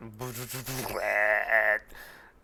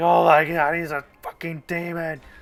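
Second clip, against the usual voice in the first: very loud, high, booming, drawn-out yell; 6 semitones higher, 9 dB louder than usual. Voicing an enemy who runs from a player's character: voicing a fleeing enemy. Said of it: "The guy who's standing here, like, who's running, he's like".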